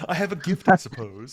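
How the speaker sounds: mocking, parodic send-up delivery. Showing how a mocking parody of Bashir would sound: O'Brien mocking Bashir. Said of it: "if O'Brien was trying to mock Bashir, this is what he would say".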